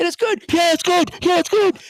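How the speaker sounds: very high, loud, screaming commentator voice. Retelling a broadcast of a Bengals field goal, imitating the announcers yelling. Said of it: "two people just screaming and yelling".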